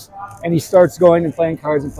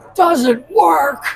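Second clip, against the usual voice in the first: high-pitched, shrill, sudden blurted scream; 11 semitones higher than usual. Retelling how someone put his head close and answered: imitating someone screaming. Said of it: "He screams".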